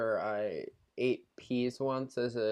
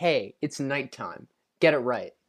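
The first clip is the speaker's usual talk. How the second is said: put-on imitated tone, said louder; 6 dB louder than usual. Retelling a guest's reply about it being nighttime: imitating the guest's tone. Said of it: "in exactly that tone as well".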